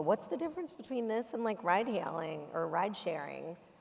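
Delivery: ordinary talk, nothing marked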